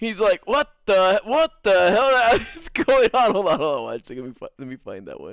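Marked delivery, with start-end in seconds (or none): 0.5-3.3 acted-out, loud, high-pitched, all-worked-up freaked-out outburst. Describing a game scene with a flamethrower, imitating Barry flipping out. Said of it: "he just, like, flips out. He's like".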